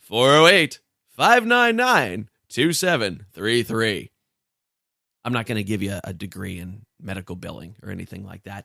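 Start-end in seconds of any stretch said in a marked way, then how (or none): 0.1-4.1 loud infomercial announcer voice. Show host reading out the phone number, in a for-profit college ad voice. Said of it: "like for-profit college voices".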